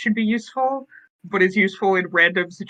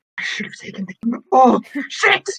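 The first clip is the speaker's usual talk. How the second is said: muttered, almost in horror; 4 semitones higher, 4 dB louder than usual. Voicing the character Alex in a scene, muttering in horror. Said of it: "he mutters in almost horror".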